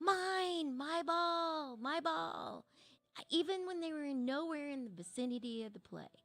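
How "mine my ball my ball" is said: mock very slow, high kid's yell, "mine" stretched long. Retelling what a kid on a soccer team kept shouting: imitating a kid yelling. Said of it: "always yelling".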